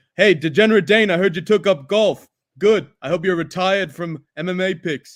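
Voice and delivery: loud, terrible fake South African accent. Greeting Degenerate Dane as a joke, terrible South African accent. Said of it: "That is a terrible South African accent".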